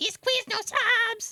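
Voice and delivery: very high-pitched, squeaky little voice. Speaker recalls a frightening tv commercial, quoting its figure in a high-pitched voice. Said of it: "he had like a high pitched voice".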